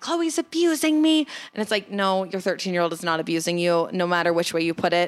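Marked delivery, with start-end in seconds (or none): 0.0-1.2 put-on shrill scream, very high-pitched. Quoting a woman calling family members, imitating a woman screaming. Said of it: "like screaming".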